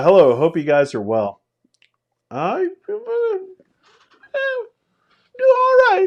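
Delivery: high puppet voice, pitch way up and swooping around. Greeting someone by name, in a Muppet voice. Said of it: "now that I did my Muppet voice".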